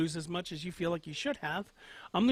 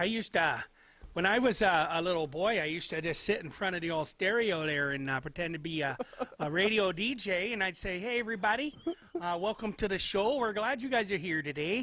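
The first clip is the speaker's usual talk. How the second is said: put-on Canadian accent; 3 semitones higher than usual. Retelling a childhood story again on request: put-on Canadian accent. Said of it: "say that again, only in, uh, Canadian".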